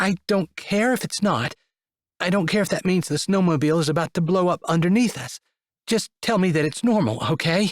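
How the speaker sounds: weak, trembling voice. Reading a story where a passenger begs for reassurance: weak, shaky voice. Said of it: "in a weak, shaky voice".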